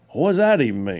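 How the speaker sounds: put-on genuine down-home country accent. Retelling a phone call from a caller who wanted to run: real country sound. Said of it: "had real country sound".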